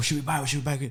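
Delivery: hushed, high-pitched half-whisper. Retelling pulling up to a drive-thru with cousins: imitating a half-whisper. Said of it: "We're all whispering".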